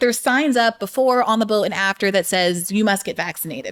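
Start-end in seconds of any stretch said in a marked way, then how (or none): none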